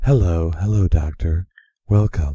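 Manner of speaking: very low, breathy, sexy voice. Imitating Morena Baccarin as the voice of the computer, in a very breathy, sexy voice. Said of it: "Very breathy and sexy".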